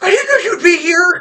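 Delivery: acted terrified scream. Voicing Lily, who screams when surprised at the house: terrified scream. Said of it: "The scream that she let out".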